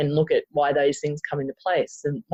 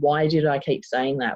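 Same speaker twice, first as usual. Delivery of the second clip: ordinary delivery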